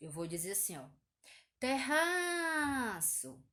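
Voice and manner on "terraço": calling out terraço, stretching the -ra- syllable. Teaching how to find the stressed syllable, terraço drawn out like calling someone. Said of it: "como se eu estivesse chamando alguém".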